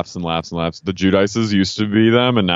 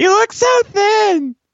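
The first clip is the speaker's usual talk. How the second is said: put-on very high drunk voice; 3 dB louder than usual. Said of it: "she gets like a high-pitched voice".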